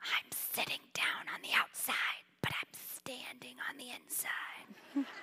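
put-on hushed, very quiet little boy's whisper. Retelling a boy answering his mother in church: imitating a boy whispering. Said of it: "leans over and whispers to her".

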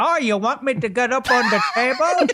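imitated Chinese accent. Speaker acting out what a man sounded like, Chinese accent impression. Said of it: "That's a Chinese accent".

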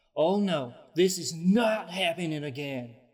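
crying out in alarm. Voicing a character in a tabletop game who sees another go down, crying out. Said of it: "she kind of cries out".

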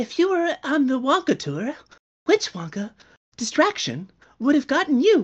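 put-on high, lilting, sing-song character voice. Reading out a message from Johnny Depp, the speaker uses Johnny Depp's Wonka voice. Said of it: "he asked me to read it in his uh, his, his Wonka voice".

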